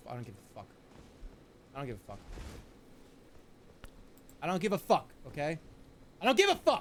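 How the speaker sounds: seething, angry, very low voice, rising. Streamer stuck on a game he can't beat: angry. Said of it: "I'm fucking seriously so mad right now".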